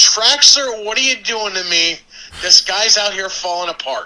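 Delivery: lightly yelled, high-pitched. Retelling someone yelling back at the curtain during a match: imitating j t yelling. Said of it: "and yells".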